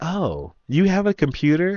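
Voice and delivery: high, surprised voice with rising pitch.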